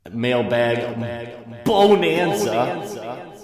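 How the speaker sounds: dramatic, slow, drawn-out, showy and grand delivery.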